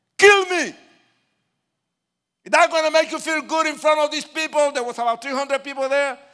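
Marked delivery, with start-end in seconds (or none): 0.2-4.7 put-on bold, defiant, high, loud screaming. Retelling how a man started screaming back at the speaker: imitating someone screaming. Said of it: "now he's screaming at me".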